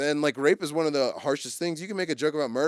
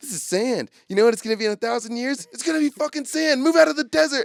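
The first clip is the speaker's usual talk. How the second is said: put-on shrill, very high, rising, loud yelling rant; 10 semitones higher, 7 dB louder than usual. Retelling a comedy bit, yelling at a starving kid: imitating Sam Kinison yelling. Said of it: "Sam Kinison being like".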